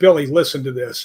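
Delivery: plain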